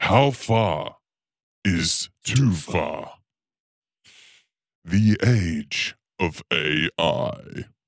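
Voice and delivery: deep, low-pitched voice. Reading out a documentary title when asked to: deep voice. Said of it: "Do the deep voice for the title".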